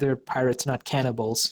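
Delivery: ordinary talk, nothing marked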